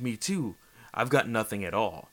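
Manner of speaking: ordinary talk, nothing marked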